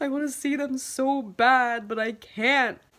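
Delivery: near tears, full of longing, high and slow. Retelling what they said at work while tearing up: retelling own tearful words. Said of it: "literally tearing up and just being like".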